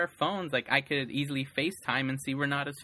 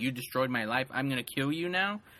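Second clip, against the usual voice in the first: put-on angry voice. Imagining how Biff reacts when he finds out: imitating an angry Biff. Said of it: "Is Biff gonna be so angry?".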